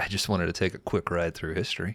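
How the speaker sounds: put-on sarcastic voice. Retelling a scene where a kid answers a security guard: imitating Morgan's sarcasm. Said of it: "we instantly jump to Morgan's fucking sarcasm".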